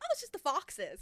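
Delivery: put-on English accent. Retelling what someone told them about the screaming, in an english accent. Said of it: "Slipped right into the accent".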